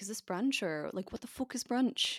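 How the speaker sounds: put-on northern English accent. Quoting what a woman said, in a slightly northern English accent. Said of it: "That was a bit northern".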